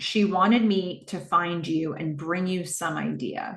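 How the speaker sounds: usual speaking voice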